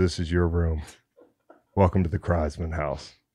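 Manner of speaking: low, hushed, solemn delivery.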